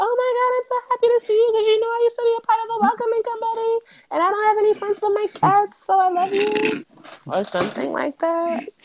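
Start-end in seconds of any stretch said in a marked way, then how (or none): 0.0-6.8 high, rushed, gushing put-on voice. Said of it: "she's like".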